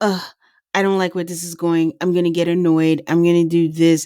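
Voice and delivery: ordinary delivery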